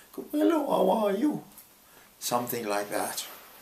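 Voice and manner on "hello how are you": character voice, very high-pitched, lifted. Demonstrating a possible voice for playing Von Trapp, higher voice. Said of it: "maybe I would have a higher voice".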